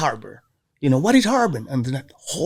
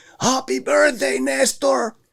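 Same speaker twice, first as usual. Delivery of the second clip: very high, rough, raspy yelling call; 11 semitones higher than usual. Player retelling someone yelling at him at third base on his birthday, retelling someone's yell. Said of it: "I hear somebody yelling at me, the same voice".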